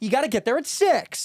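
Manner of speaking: very high, loud yelling, pitched way up. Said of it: "If you're just yelling".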